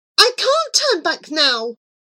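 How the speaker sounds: high-pitched, full-volume shout. Riding off, she answers Dark's plea to turn back, shouting. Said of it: "she shouted".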